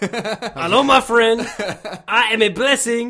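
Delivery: very high, booming, loud, bad fake French accent. Joking about a bad disguise, speaking as a blessing in disguise; bad French accent. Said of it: "not French".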